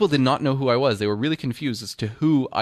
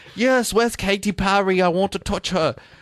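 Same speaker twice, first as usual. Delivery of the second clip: bad put-on British accent, pitched high; 6 semitones higher than usual. Retelling own costume party lines: worst Russell Brand impression. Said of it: "It's like the worst Russell Brand impression ever".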